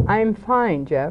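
icy, cold, detached, distant tone. Giving a little illustration of a dialogue of feeling, in a cold tone. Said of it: "you had a very cold tone to your voice".

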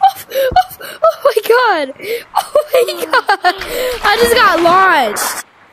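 high, laughing squeals of disbelief, slowing down.

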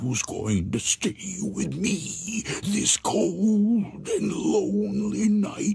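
whisper, high, each word drawn out slowly. In a read ghost story, an unseen voice whispers right behind her: whispering. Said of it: "it was whispering".

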